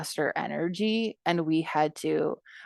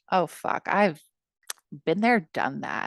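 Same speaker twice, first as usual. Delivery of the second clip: put-on snide, sneering scoff. Retelling own past reaction to girls' stories: imitating own sneering mutter. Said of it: "sneering under my breath".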